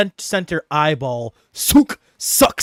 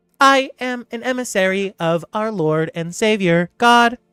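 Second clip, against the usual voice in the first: high, pitched-up robotic voice; 6 semitones higher than usual. Voicing a robot creature introducing itself to a player: Modron robot voice. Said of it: "the robot sphere eye monster tentacle creature looks down at you and it says".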